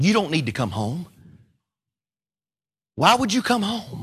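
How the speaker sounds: frail, barely-there, broken, worn-out voice. Retelling a father's words on the phone: imitating a broken voice. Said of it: "My dad on the phone with a broken voice".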